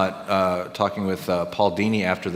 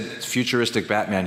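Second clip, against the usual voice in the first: usual speaking voice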